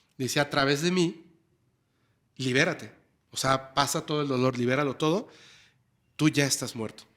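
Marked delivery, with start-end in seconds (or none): none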